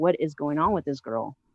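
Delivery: ordinary delivery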